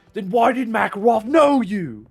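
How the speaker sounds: put-on British accent, pitched high and loud. Speaker trying to think of a Call of Duty line, Price impression, British accent. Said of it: "Price is like a British accent".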